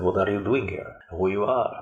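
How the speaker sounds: strong, heavy put-on Brooklyn accent. Retelling what an old man at the gate asked: imitating a brooklyn accent. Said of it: "His accent was really Brooklyn accent".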